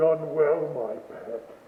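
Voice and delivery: deep, dark voice. Reading a story aloud, voicing a creature praising someone: deep, dark voice. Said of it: "praised in a deep, dark voice".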